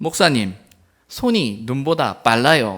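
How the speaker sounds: put-on loud Gyeongsang regional accent. A pastor retelling a deaconess's remark while pulling grass: gyeongsang dialect. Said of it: "경상도 사투리로 그렇게 말했다".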